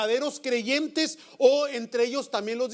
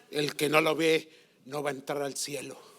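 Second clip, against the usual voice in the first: very macabre, eerie, ghostly voice; 10 semitones lower, 4 dB quieter than usual. Retelling what a praying woman told the aunt: imitating a very macabre voice. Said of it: "con una voz así muy macabra".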